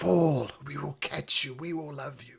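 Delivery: eerie voice echoing from a deep chasm. Voicing a voice rising from the chasm below, calling a player to fall: echoing voice from a chasm. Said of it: "you hear a voice. It's almost echoing up from the chasm below".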